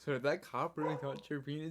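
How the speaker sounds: plain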